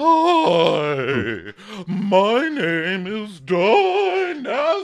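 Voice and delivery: very high, loud, flirty, seductive vamping voice. Retelling how Tanya introduced herself as Dynasty, imitating Tanya's sexy voice. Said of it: "that's her sexy voice".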